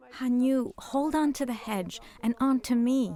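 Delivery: ordinary delivery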